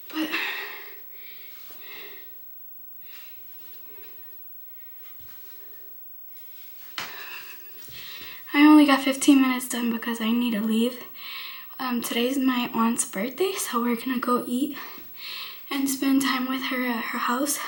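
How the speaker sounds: out of breath, breathless, winded. Speaker tells the guys only fifteen minutes got done, out of breath. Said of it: "I'm out of breath".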